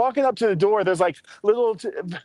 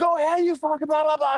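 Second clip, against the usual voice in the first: mock male scream, higher; 7 semitones higher than usual. Retelling a man screaming at a woman: imitating a man screaming. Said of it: "He's screaming at her".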